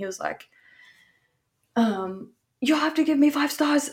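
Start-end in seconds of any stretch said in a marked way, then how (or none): 1.8-3.9 mock, worked-up, high-pitched yelling. Retelling a man in the lobby demanding five stars, imitating someone yelling.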